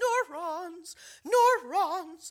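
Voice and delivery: very high, shrieking, screaming scientist voice. Imagining being a scientist and screaming about neurons: screaming in scientist voice. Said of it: "I would scream in my scientist voice".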